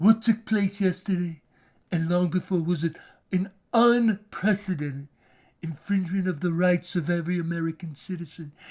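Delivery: very low, deep, soft put-on voice. Quoting a statement made after a house raid, in Donald Trump voice. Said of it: "I'll say in his voice".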